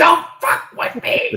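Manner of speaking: very loud, booming, drawn-out demonic voice. Retelling a character's line from a scene: imitating a possessed voice. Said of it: "And her best possession voice".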